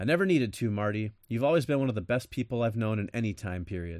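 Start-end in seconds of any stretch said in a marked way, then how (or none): none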